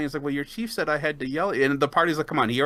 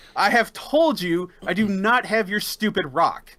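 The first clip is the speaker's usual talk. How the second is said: high-pitched voice calling out; 5 semitones higher than usual. Narrating the party's search for a rock, voicing Francois yelling across the cave. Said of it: "And he starts yelling across the cave".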